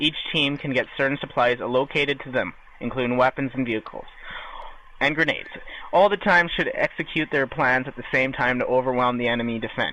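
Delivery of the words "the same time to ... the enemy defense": ordinary talk, nothing marked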